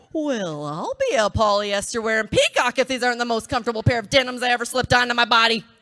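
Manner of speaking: put-on Wisconsin accent, high and loud. Slipping on a new pair of jeans, in a Wisconsin soccer mom voice. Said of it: "suddenly I'm talking like this Wisconsin soccer mom".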